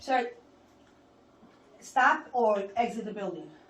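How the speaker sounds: loud, agitated, upset tone. A guard orders a man filming in a federal building to stop; upset. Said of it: "why are you so upset?".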